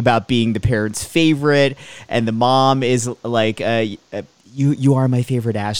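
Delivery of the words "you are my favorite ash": put-on playful joking tone, much slower. Retelling a mom teasing her son Ash, imitating her joking around. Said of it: "like joking around".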